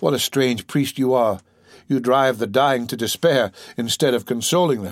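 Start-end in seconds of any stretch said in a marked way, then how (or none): none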